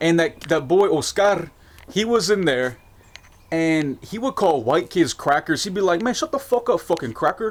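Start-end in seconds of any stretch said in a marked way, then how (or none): 6.0-7.5 high, put-on Mexican accent. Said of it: "like Mexican accent or whatever".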